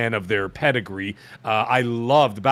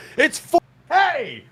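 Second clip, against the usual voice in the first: very high, shrill, acted yell; 3 dB louder than usual. Imagining a divorce court scene, yelling across the room to his wife, imitating Colt yelling. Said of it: "he's like yelling across the room".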